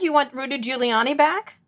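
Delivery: playful, light, tongue-in-cheek teasing tone. Asking the other person a follow-up question, teasing. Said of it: "I'm teasing you there".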